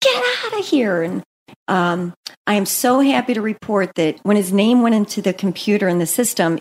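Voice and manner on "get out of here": high-pitched, screamed shout. Retelling screaming at a masked man: imitating own scream. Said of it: "I screamed at him and said".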